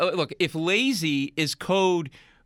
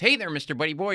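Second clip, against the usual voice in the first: put-on dorky, square, nerdy guy voice; 7 semitones lower, 5 dB quieter than usual.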